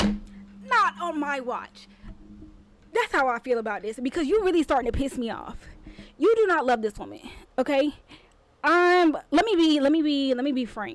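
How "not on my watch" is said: very slow, drawn out, each word deliberate. Reacting to a letter, acting out a meme line: Ayana meme impression. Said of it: "that Ayana meme where she be like".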